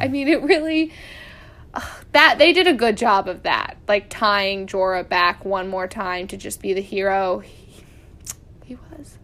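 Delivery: choked-up voice, on the verge of crying. Recapping a tv episode, close to crying. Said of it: "I'm going to cry".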